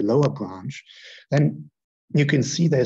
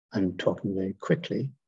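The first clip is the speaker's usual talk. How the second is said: ordinary delivery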